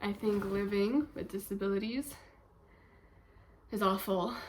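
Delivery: short of breath, winded. Speaking candidly about their own life, out of breath. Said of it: "now I'm out of breath".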